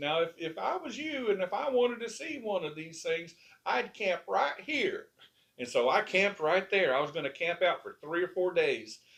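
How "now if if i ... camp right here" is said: small, squeaky, high-pitched little voice. Retelling what Smokey Crabtree said while showing him around, in a little squeaky voice. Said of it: "he said in that little squeaky voice of his".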